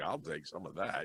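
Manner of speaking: normal talking voice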